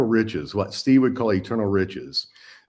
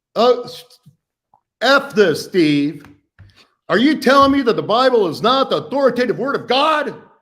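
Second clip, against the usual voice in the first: very high, loud, heated, exasperated angry outburst; 13 semitones higher, 5 dB louder than usual. Retelling his own early frustrated challenge to Steve: imitating his own angry outburst. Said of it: "it looked something like this".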